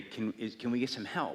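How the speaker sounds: normal talking voice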